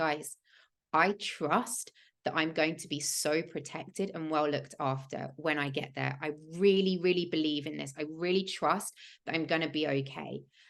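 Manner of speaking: normal talking voice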